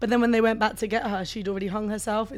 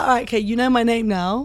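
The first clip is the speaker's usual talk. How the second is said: ordinary talk, nothing marked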